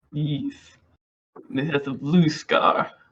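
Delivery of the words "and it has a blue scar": put-on Russian accent, louder. Playing a character describing a dragon, Russian accent. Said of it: "English with a Russian accent".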